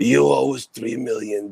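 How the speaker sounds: put-on mafia gangster voice. Joking in a group conversation, doing a Godfather gangster voice. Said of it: "Cuban gangsters would sound like the Godfather".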